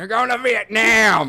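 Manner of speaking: very high, loud war-movie soldier shout. Retelling how characters talk in war movies: imitating a war movie line. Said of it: "All those war movies, and they're like".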